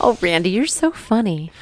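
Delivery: slow, sarcastic drawl with feigned delight. Answering another speaker's joke: sarcastic. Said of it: "That's sarcasm".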